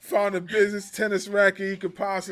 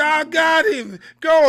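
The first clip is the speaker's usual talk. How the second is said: pitched-up, raised voice, very slow and dragged out; 8 semitones higher, 9 dB louder than usual. Retelling a funny wrestling moment: imitating Lio Rush. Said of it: "He was like".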